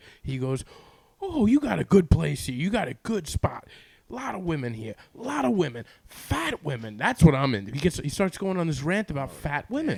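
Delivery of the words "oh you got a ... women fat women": ranting, yelling at the top of the lungs. Retelling what the gorilla guy yelled outside the apartment: imitating someone yelling. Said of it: "he's at the top of his lungs outside".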